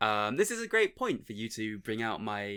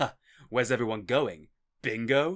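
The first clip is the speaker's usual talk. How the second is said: put-on earnest, raised, deadpan, no trace of irony; 6 dB louder than usual. Retelling a game hero's line to another speaker: imitating a line said without irony. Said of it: "with no hint of irony".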